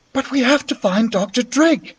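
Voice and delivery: soft, high-pitched whisper. On the stairs, the narrator answers Beatrice, whispered back. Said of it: "I whispered back".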